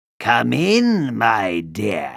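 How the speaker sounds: menacing, growling wolf voice. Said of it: "growled the wolf".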